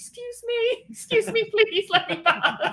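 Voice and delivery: play-acted very high, drawn-out screaming. Recalling being cornered by two people with chainsaws: retelling a scream. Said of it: "I'm like screaming".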